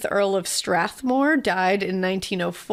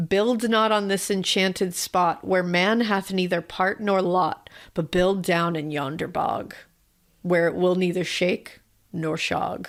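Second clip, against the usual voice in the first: ordinary talk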